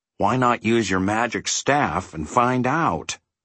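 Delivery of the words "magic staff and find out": plain reading voice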